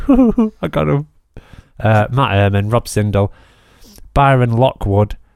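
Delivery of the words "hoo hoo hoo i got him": mock, very high, tittering hoo-hoo giggle. Imitating patrons hearing their names read out: imitating someone giggling. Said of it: "they'll be giggling".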